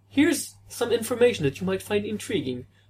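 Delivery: put-on polite English accent. Imitating a polite comics writer's reply in an english accent. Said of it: "I'm giving Kurt Busiek an English accent".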